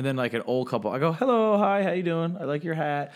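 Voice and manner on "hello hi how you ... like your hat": boozy, drunken-sounding put-on Irish brogue. Retelling greeting an old couple while hammered: imitating own put-on Irish accent. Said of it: "we're all talking now in Irish accents 'cause we're all hammered".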